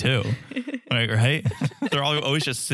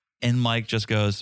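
usual speaking voice

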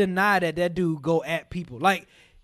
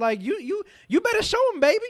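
put-on hyped-up enthusiastic voice, higher; 11 semitones higher than usual. Imagining what friends' mothers would say: imitating friends' mothers hyping him up. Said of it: "other mothers ... would probably be like".

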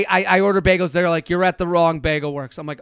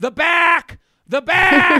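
very high, squawking, drawn-out crowd screaming; 11 semitones higher, 4 dB louder than usual. Retelling people in line yelling at a newcomer: imitating people screaming. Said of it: "as they're screaming at me".

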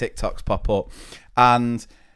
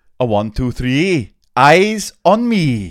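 put-on Welsh accent, much louder than normal; 3 semitones higher, 6 dB louder than usual. Trying out different accents in turn, the speaker now does a welsh accent.

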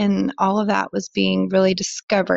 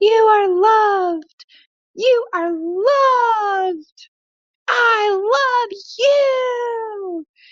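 mock tantrum scream, very high and very drawn out; 14 semitones higher than usual. Retelling a toddler's tantrum in a grocery store: imitating a child screaming. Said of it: "he would just start screaming at me".

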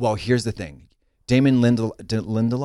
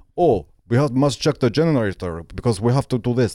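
fake, exaggerated put-on Russian accent. Describing what British actors in a Soviet-set story avoid: phony Russian accent. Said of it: "Like they don't do the phony Russian accents".

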